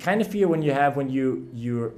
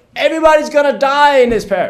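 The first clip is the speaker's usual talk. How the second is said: frazzled priestly voice, much louder and higher; 13 semitones higher, 14 dB louder than usual. Telling a joke, the frazzled priest repeats the line: imitating a priest saying it louder. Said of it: "he says it a bit louder".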